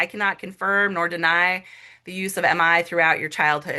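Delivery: ordinary talk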